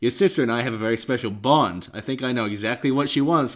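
ordinary delivery

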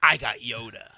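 mock, very loud, booming, commanding authoritative voice. Retelling how a child showed a Yoda toy, imitating saying it with authority. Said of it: "with authority".

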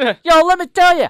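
belted out loudly in a Boston accent. Showing how he would sound from beyond the grave, Bill Burr impression. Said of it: "I just sounded like some Boston sports fan".

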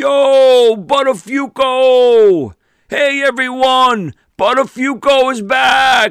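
put-on very high, very slow, drawn-out screaming. Retelling being greeted backstage: imitating Gene screaming. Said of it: "Gene saw me and started screaming".

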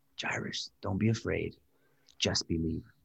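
soft, hushed, close whisper. Imagining a figure reassuring a grieving father: whispering as Jesus. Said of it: "I imagine Jesus whispering to Jairus and saying".

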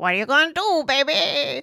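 badly done squeak, pitched way up. Quoting a line right after the Bad Boys movie pick, in a Rick the Hormone Monster voice. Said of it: "my impressions are terrible".

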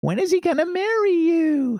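funny, very high, loud gossipy voice. Speaker voicing what her girlfriends kept asking her, funny voice for her girlfriends. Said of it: "let me put on a funny voice here".

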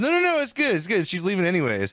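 dismissive, brushing-off tone.

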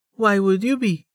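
very high-pitched voice. Narrator reading Amelia's reply to a man she is holding, said with a smile. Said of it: "Amelia said with a smile".

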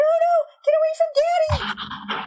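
very high, stretched-out, slow, loud scream. Voicing a scream heard from down the hallway: screaming. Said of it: "you hear another scream".

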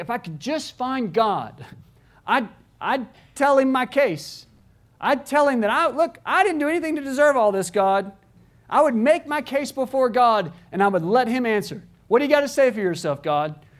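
indignant tone with attitude. Paraphrasing Job making his case before God: imitating Job's indignant tone. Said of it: "I'm putting some tone in Job's voice".

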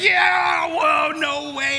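excited, high, loud amazed shout.

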